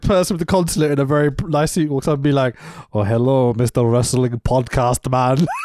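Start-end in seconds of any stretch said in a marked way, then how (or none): 2.9-5.5 put-on Saudi-accented speech. Joking with a co-host about a consulate official greeting them, put-on Saudi accent. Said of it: "that accent?".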